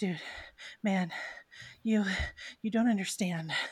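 breathless character voice. Voicing a panting character who dodged a body check: panting NPC voice. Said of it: "he's panting at this point".

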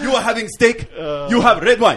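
put-on Somali-accented speech. Joking about pirates, playing one who orders for the table, in a weak mock Somali accent. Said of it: "your Somalian accent's not as strong".

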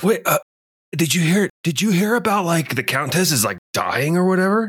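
put-on surfer dude voice. A player's character gossips about the Countess at a dance, surfer guy voice. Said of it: "that was way too surfer guy".

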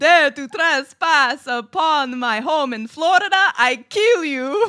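put-on loud, threatening voice in a vampire accent. Telling a story, voicing a character's line like the Count from Sesame Street. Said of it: "Sounding like the count from fucking Sesame Street".

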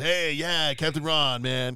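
loud, gravelly, raspy pirate-style voice. Discussing the character with others, the speaker quotes him: Captain Ron's gravelly pirate voice. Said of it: "that gravelly, raspy pirate voice".

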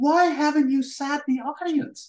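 put-on, high-pitched, drawn-out shouting. Retelling how a boss burst in asking why the audience wasn't seated: imitating someone shouting. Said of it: "he says it like he shouts it".

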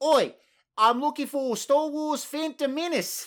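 put-on slight New Zealand accent, very high, slow. Trying another accent after being told to drop the Australian one: slightly New Zealand accent. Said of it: "That almost sounds a little bit New Zealander".

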